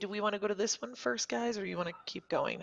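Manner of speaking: whispering. Asking the group which one to go to first, whispering. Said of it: "I whisper".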